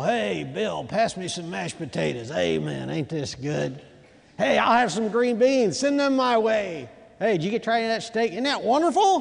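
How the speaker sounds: cheerful, happy group chatter. Acting out lepers enjoying a meal together: acting out lepers feasting at table. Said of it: "Can you imagine these lepers as they're sitting around the table?".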